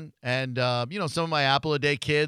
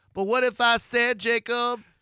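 very high, affected, put-on coaxing tone; 9 semitones higher than usual. Acting out a conversation with Jacob, imitating Brittany's put-on voice. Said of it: "that's kind of the voice she puts on".

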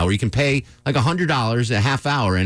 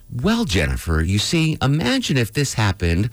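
mock calm storytelling narrator voice. Recounting how a man talked to jennifer, imitating a calm storytelling voice. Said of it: "he had this storytelling voice on. He's like".

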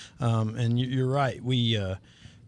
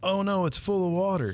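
mock high shrieking scream; 8 semitones higher than usual. Retelling opening the storm shelter lid with the kids, re-enacting a scream. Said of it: "and I scream".

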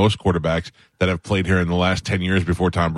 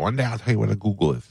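mock lisping speech; 2 semitones higher, 4 dB quieter than usual. Retelling what her fifth-grade math teacher used to say, imitating Miss Suford's lisp. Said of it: "She had a lisp".

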